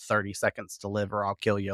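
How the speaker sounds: ordinary talk, nothing marked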